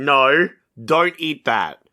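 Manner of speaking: slow, drawn-out jungle man voice. Retelling a movie scene where Tarzan meets a lion: imitating Tarzan. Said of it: "He goes up to the lion and is like".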